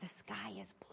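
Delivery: put-on whisper. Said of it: "She'd whisper things like".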